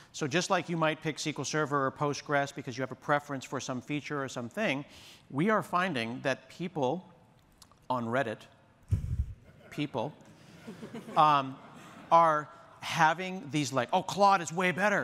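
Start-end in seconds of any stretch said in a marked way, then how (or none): 14.0-15.1 mock, argumentative put-on bro voice. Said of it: "I don't know how Reddit people talk".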